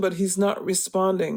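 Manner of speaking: usual speaking voice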